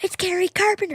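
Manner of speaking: put-on high, carrying yell. Retelling calling out to dad from across the street: imitating own yell. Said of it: "I just yelled from, like, across the street".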